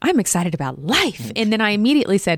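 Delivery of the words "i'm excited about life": put-on, blurted-out burst of enthusiasm. Speaker quotes what they exclaimed out loud the other day: retelling an exclamation. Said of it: "I exclaimed".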